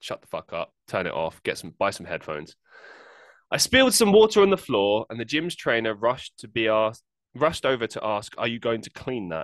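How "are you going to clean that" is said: put-on condescending tone. Quoting a gym trainer after spilling water: imitating a condescending tone. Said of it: "in a very condescending tone".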